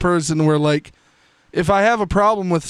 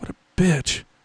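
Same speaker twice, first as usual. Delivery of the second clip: put-on muttered whisper under breath; 4 dB quieter than usual. Retelling muttering an insult as a classmate walked away: imitating a whisper under breath. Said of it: "I whispered under my breath".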